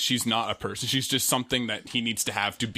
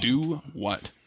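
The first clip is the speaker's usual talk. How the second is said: ordinary delivery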